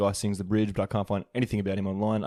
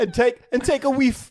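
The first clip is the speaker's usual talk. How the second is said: put-on Jamaican patois voice, higher and louder; 7 dB louder than usual. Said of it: "do [name] doing a, doing a Rasta-".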